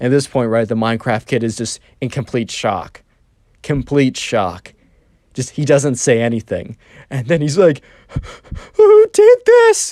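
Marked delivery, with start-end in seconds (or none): 8.7-9.9 put-on very high, raised whimpering wail, crying. Speaker retells the Minecraft kid's shocked reaction; imitating a crying, whimpery voice. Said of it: "a crying, whimpery voice".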